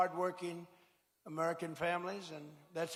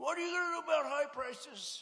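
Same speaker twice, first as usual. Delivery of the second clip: mock, very high, shrill, badgering scream; 9 semitones higher than usual. Retelling reporters at a press conference: imitating reporters screaming. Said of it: "they're screaming at me".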